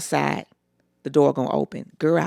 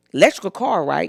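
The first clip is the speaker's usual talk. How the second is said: ordinary delivery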